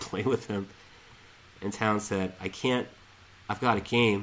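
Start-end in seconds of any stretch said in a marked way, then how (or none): none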